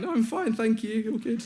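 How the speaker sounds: very high, squeaky, small voice.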